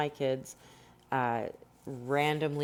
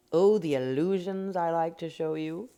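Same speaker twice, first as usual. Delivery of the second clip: loud, affected, put-on English accent for show; 4 semitones higher, 5 dB louder than usual. Showing a blended look to the audience, in a put-on English accent. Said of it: "that's my English accent".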